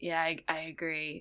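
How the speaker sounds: whispering. Arnadel whispers back to Kara, whispering. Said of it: "Arnadel's going to whisper back to Kara".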